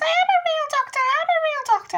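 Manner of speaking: very high, squeaky voice, way up high. Retelling a woman's retort in an argument about being a real doctor, imitating her squeaky voice. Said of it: "she goes in a squeaky voice".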